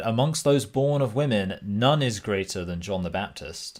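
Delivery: normal talking voice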